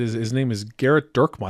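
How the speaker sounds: plain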